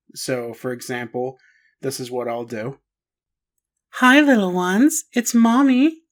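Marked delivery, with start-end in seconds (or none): 3.9-6.0 put-on very high, raised feminine mommy voice. Demonstrating how he records a track in a put-on feminine voice. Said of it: "I'll use a feminine tone... putting on a girl's voice".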